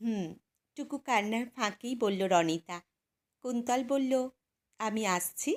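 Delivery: ordinary delivery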